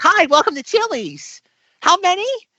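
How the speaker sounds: put-on very high, slow teen girl voice. Describing the 16-year-old girl greeting diners at Chili's: imitating a 16-year-old hostess. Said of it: "you have like the 16-year-old like girl there".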